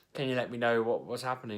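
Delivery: ordinary delivery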